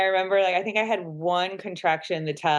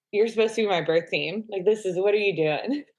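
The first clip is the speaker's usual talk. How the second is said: acted-out scolding tone. Retelling scolding the birth team during labor: imitating own scolding. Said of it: "it was like a scolding of".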